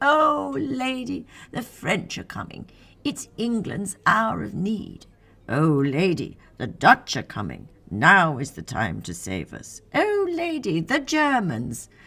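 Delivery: put-on posh upper-class English accent, high and swooping. Narrator reads Vivian imitating the English royals who pestered her, in a posh English accent. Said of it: "Vivian adopted a posh English accent".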